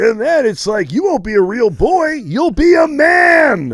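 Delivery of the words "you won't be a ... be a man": cheerful, high, put-on voice with man stretched out. Voicing a talking character who advises taking edibles: positive upbeat character voice. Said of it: "That's the voice I did".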